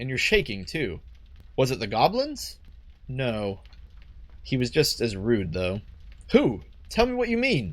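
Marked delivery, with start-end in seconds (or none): 6.3-7.7 high, shrill yelling, pitched way up. In a drama scene, demanding the other explain what they mean, shouting. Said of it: "Stop shouting".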